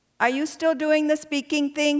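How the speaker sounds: put-on cute light Vietnamese accent. Retelling what your neurologist asks at every visit, in Dr. Nguyen's Vietnamese accent. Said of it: "in his cute little Vietnamese accent".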